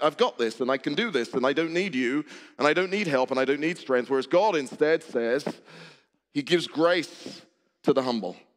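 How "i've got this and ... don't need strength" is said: plain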